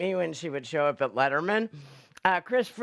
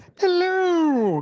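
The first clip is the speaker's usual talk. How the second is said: very high pitched, loud, stretched and drawn out; 12 semitones higher, 7 dB louder than usual. [name] is asked whether he has an impression in him and answers with a Julia Child impression. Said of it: "Very good, [name]".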